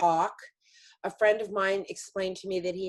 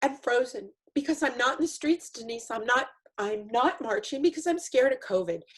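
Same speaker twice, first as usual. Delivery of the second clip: weeping, tear-choked, crying through the words; 4 semitones higher than usual. Addressing another speaker, crying while speaking. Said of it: "I'm going to cry through this whole thing".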